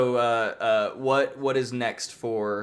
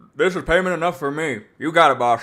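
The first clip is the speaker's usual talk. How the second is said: loud, pitched-up talking around a mouthful while chewing; 6 semitones higher, 6 dB louder than usual. Voicing a character who is eating venison, talking with mouth full. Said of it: "with a mouthful of venison".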